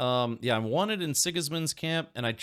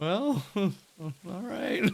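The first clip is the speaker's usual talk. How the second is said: put-on resigned acceptance, pitched-up; 7 semitones higher than usual. Retelling a character's reaction in a game: imitating Henry, resigned. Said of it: "He's just resigned to his fate".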